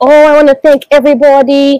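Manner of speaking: put-on Scottish accent. Acting out someone's thank-you speech in a put-on Scottish accent. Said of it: "Was that a Scottish accent?".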